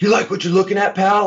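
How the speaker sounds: furious, very high-pitched, angry scream. Retelling a grocery store moment when dad yelled at a man, imitating dad screaming. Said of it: "my dad starts screaming at him".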